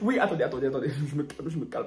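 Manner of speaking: choked with tears, crying, tearful voice. Recovering from tears while testifying in a skit, acted tearful emotion. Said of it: "c'est l'émotion parce que ça me fait mal".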